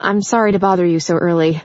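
usual speaking voice

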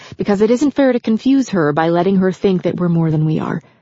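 ordinary delivery

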